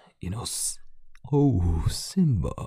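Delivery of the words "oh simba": deep villain voice, much quieter. Describing how Scar from The Lion King talked, doing a Scar voice, deep. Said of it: "His voice was deep and like would talk like this".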